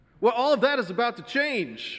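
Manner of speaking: mock very high, chipper, chirpy salesman cheer. Retelling what a caller said to him on the phone, chirping like the caller. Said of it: "he chirped".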